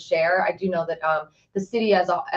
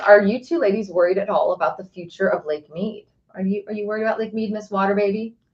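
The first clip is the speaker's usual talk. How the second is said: plain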